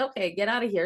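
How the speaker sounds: plain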